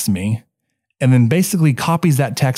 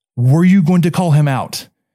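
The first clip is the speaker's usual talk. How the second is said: loud, higher-pitched speech; 3 semitones higher than usual. A coach retells questioning an umpire during a game; retelling speaking loudly. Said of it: "I'm still speaking very loudly to him".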